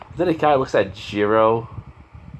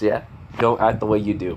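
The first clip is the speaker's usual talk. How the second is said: ordinary delivery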